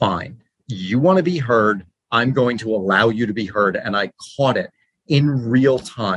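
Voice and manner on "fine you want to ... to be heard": plain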